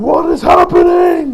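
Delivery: high, loud, slow, bewildered villain cry.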